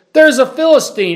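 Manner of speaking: high, loud, panicked, frightened shout.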